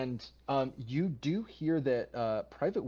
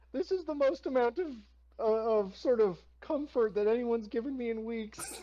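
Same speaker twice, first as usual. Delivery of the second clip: put-on very high, sorrowful teenage boy voice; 10 semitones higher than usual. Voicing a teen thanking a dwarf for comfort: sad teen voice. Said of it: "this guy is both sad as a person".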